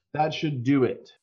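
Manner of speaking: calling out. A game master voices a character yelling back up from a distance: yelling. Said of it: "he turns back up to you and yells".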